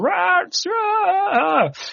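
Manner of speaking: high-pitched mock scream, shrieked. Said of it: "everybody's screaming".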